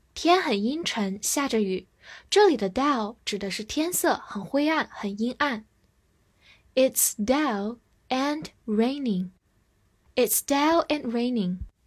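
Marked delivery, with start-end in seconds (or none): 6.8-9.3 very slow, careful reading. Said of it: "我们慢读一遍".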